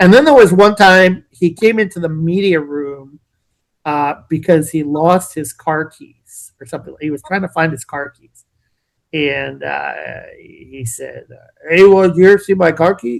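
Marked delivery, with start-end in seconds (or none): 11.7-13.2 throaty big-man voice pushed from the throat. Retelling a lost car keys question: low guttural Andre the Giant voice. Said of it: "in his low kind of guttural Andre the Giant voice".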